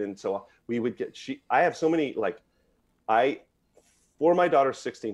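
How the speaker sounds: stammering, stuttering with false starts, tripping over words. Parent recalling a daughter's sixteenth birthday present: stuttering. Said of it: "I'm stuttering, I know".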